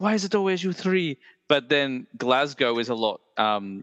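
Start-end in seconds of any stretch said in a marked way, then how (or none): 0.0-1.2 put-on posh Edinburgh Scottish accent, pitched up. Showing a Scottish accent as a character: Professor McGonagall voice. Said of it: "more like Professor McGonagall".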